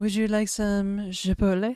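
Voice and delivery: put-on French-accented delivery. Joking about the word chipotle, saying it in a put-on French accent. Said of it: "We can say it with a French accent".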